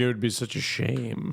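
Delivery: speaking in a woman's manner of talking. Mocking how the woman in the video talks: imitating the woman's way of talking. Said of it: "why is she talking like this? Like, she's, like, talking like this. She's like".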